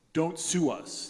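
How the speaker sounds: frightened, terrified, begging tone. Retelling how a band answered a request to buy records: imitating a terrified voice. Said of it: "in this terrified voice saying".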